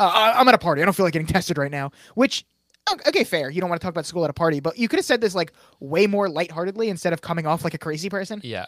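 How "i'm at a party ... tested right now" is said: put-on defensive manner. Retelling how he reacted when called out at a party, imitating a defensive reply. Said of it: "he gets like super defensive".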